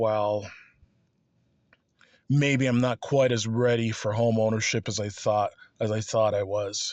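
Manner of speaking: normal talking voice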